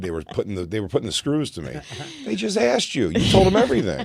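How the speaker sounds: ordinary talk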